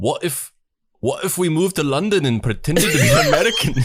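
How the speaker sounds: put-on Scottish accent. Asked to read the line in a Scottish accent, the speaker reads it in a Scottish accent. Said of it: "You want to read that in a Scottish accent?".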